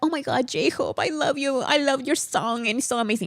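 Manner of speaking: put-on fawning gush. Imitating a guest who now praises j-hope after earlier shade: mocking imitation of fawning praise. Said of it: "And now he's all like".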